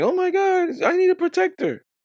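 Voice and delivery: very high, loud, shrill screaming. Retelling how women react to a spider: imitating women screaming. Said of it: "They start screaming".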